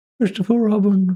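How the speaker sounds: put-on elderly man character voice. Talking about favorite Winnie the Pooh characters, doing an old man voice. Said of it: "just kind of like make an old man".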